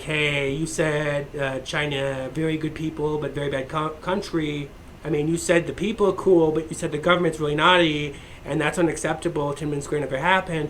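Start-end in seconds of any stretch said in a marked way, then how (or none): none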